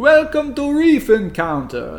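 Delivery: slow, high-pitched, drawn-out vampire accent. Opening a board game rules overview, welcome listeners in a vampire-sounding voice. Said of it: "that sounded like a vampire".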